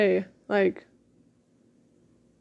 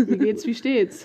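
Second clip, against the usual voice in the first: ordinary delivery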